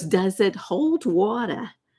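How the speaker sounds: put-on slow New York accent. Quoting Marisa Tomei's line from the movie, in her New York accent. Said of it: "In her in her New York accent".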